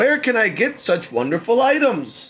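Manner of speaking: very loud, very high, swooping exclamation. Telling a story, quoting a friend who comes up at game night, retelling a very loud exclamation. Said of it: "very loudly says".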